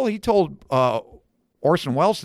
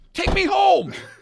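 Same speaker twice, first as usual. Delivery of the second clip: mock furious, very high-pitched. Speaker reenacts telling a driver to take him home, retelling an angry demand. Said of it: "I'm so mad".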